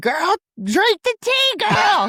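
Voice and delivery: mock shrill scream, high, rising and swooping. Retelling a reaction to a show's ending: imitating own screaming at TV. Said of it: "I was screaming".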